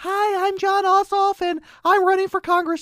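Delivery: put-on very high small child voice. Mocking a candidate's ad voiceover, quoting it mocking Jon Ossoff as little kid. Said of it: "It sounds like a little kid voice".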